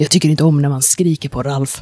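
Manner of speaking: dark, low voice. Narrator voicing a character's reply in a story, Ralph's dark voice. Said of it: "en mörk röst som så här".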